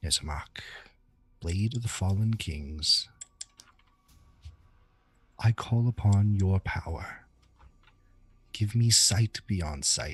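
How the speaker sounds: hushed, secretive whisper. Voicing a character calling on a blade for power: whispering in character. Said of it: "And he's gonna whisper".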